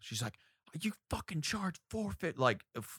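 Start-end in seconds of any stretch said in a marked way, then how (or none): 0.8-2.4 very high, shrill, furious screaming. Retelling a customer's complaint about taco prices, imitating a woman screaming. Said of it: "started screaming at me over the price".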